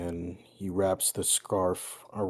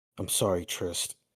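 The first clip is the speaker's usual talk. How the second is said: muttering under breath. A player's character, as an attacker runs at him, muttering under breath. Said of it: "he kind of mutters under his breath".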